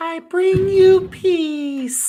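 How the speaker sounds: the word "peace" pitched way up and stretched out. Quoting the alien from The Simpsons after comparing a voice to it: The Simpsons X-Files alien voice. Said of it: "that X-Files alien on The Simpsons".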